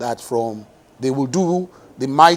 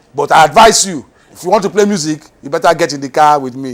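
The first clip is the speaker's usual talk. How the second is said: very angry, stern, loud voice; 2 semitones higher, 8 dB louder than usual. Retelling what was said after the school promotion, imitating someone speaking angrily. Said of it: "He just said it very angrily".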